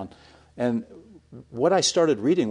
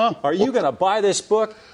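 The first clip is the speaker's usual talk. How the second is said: put-on screaming, higher and louder; 9 semitones higher, 5 dB louder than usual. Retelling how a man in the bookstore was screaming: imitating someone screaming. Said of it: "started screaming at me".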